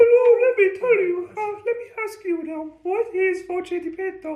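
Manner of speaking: put-on falsetto voice, very high. Retelling a clip of a man who speaks, imitating a man's falsetto. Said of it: "he speaks in his falsetto".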